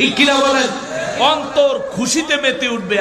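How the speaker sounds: fervent, preacher-like shouting.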